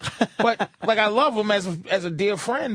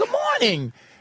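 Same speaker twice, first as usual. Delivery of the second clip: very high-pitched, fake-nice, put-on sweetness. Imitating the girl who greets everyone early: imitating a fake-nice morning greeting. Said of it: "and it's like".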